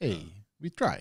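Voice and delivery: put-on soft Portuguese accent, broken English. Joking about a phrase, the speaker repeats it in a broken-English Portuguese accent. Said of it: "a little bit of a broken English Portuguese accent".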